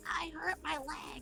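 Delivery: high, slow, put-on sick-sounding voice. Speaking for a teddy bear: put-on sick voice. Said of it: "I try to do my best voice and like sound like I'm sick".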